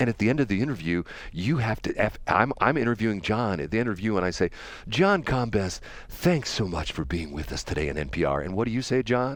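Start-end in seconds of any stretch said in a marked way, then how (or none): 4.9-9.4 soft, unexcited, very deep radio-host voice. Showing how you sign off an interview with a guest, in NPR moderated radio tone. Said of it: "We have a moderated tone to our voices".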